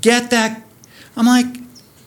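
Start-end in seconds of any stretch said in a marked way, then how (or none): 0.0-0.6 mock shout, very high, yelled. Retelling a crowd pointing at the speaker, imitating someone yelling.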